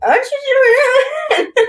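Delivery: very high, very slow, mumbling through a stuffed mouth. Picturing another speaker standing there with snacks in his mouth: imitating talking with mouth full. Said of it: "with Scooby snacks in his mouth, being like".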